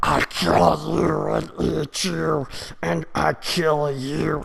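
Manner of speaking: play-acted throaty death-metal growl, screamed from the back. Describing someone screaming heavy metal at you, imitating death-metal screaming. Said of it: "screaming like this heavy metal punk death rock".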